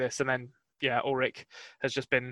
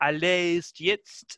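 awful attempted fake French accent, higher; 5 semitones higher, 4 dB louder than usual. Speaking to listeners, attempting a foreign phrase: awful attempted French accent. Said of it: "that is an awful accent I've just attempted there".

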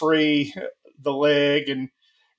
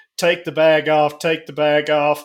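ordinary talk

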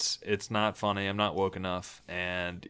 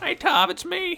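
very high, loud, drawn-out put-on cartoon voice; 6 dB louder than usual. Answering a pretend phone call as a joke: Morty voice. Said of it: "Morty talks like that".

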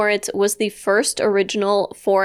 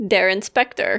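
normal talking voice

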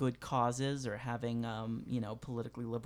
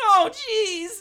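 very high, loud squeaky character voice; 14 dB louder than usual. Joking about a Doc and Marty scene, the speaker slips into Morty voice. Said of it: "the Morty voice. It's just like".

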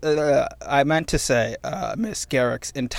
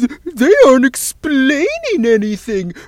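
put-on voice, high and loud with a whine. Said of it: "That was actually a really good Doug Walker impersonation".

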